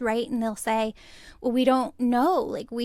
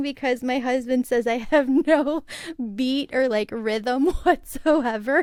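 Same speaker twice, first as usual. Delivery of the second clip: words spoken through laughter; 4 dB louder than usual. Telling how the husband says there's no rhythm, laughing while talking. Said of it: "I'm laughing".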